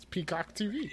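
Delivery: high, odd put-on pitch, said weirdly.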